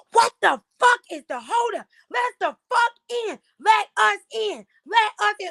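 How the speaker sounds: mock shrill, very high-pitched yelling. Retelling a crowd outside the audition room: imitating people yelling. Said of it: "Bitches was yelling like".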